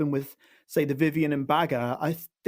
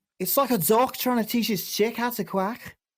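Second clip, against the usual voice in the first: attempted Scouse Liverpool accent, pitched high; 7 semitones higher than usual. Trying once more after another speaker's advice; attempted scouse accent. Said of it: "I'll try it one more time".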